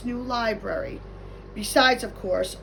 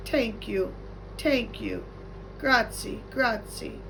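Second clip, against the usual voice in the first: soft character voice, slower pace; 4 dB quieter than usual. A narrator reads Mister Lemoncello bowing to a wild crowd, very soft. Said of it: "said very softly".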